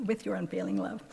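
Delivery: ordinary delivery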